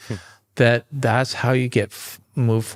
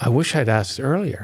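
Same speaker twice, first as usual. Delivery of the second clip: imitated mutter under the breath. Retelling what a young Marine said after loading the truck: imitating a mutter under breath. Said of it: "he kinda muttered under his breath".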